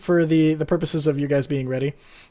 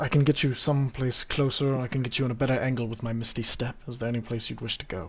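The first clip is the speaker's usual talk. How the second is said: hushed whisper, lower and quieter; 5 semitones lower, 10 dB quieter than usual. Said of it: "and he whispers".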